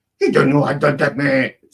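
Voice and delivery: high, loud put-on woman's voice. Trying to do her voice, as it always comes out: imitating her voice. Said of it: "every time I try to do her voice, it sounds like this".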